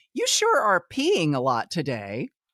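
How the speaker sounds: mock condescending, jabbing tone. Quoting the office manager speaking before the whole office: mocking a condescending tone. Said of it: "say in a condescending tone".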